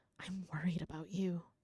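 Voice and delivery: bewildered whisper. Reading a game story's old lady line aloud: bewildered whisper. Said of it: "says in a bewildered whisper".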